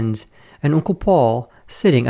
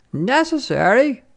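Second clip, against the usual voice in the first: cried out, pitched very high; 9 semitones higher than usual. Narrator reads a woman's reply to the narrator's cold remark: cried out. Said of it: "she cried".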